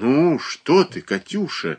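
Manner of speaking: amazed, very slow and stretched. Reading a mother's reply to her daughter Katyusha, astonished. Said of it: "изумилась Марья Дмитриевна".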